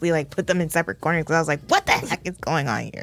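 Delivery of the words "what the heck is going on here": firm, stern, scolding parent tone. Retelling stopping the children's fight: imitating own stern mom voice. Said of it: "I used my stern mom voice".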